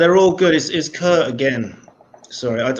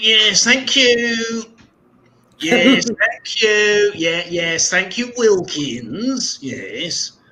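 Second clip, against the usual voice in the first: put-on pitched-up, old schoolmaster character voice; 6 semitones higher than usual. Doing an impression of the speaker's old physics teacher for others; Mr. Ross impression. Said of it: "Do you want to see my impression?".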